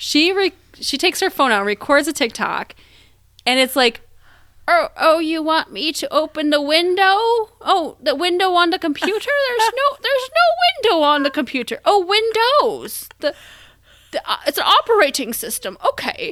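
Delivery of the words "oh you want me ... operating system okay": put-on older lady voice, much higher. Retelling a woman's TikTok prank on phone scammers who call her, in an old lady voice. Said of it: "You do a really nice older lady".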